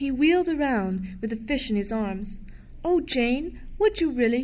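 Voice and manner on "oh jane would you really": crying out, sounding surprised. A boy turns to answer a woman's offer, crying out in surprise. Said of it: "he cried in surprise".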